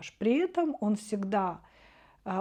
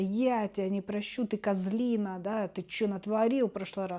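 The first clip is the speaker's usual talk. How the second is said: usual speaking voice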